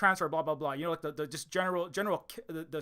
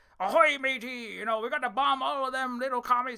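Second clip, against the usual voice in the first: pitched-up, swashbuckling ahoy-matey pirate voice; 7 semitones higher, 4 dB louder than usual. Retelling how an actor first read a line: imitating a pirate voice. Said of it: "like a pirate voice".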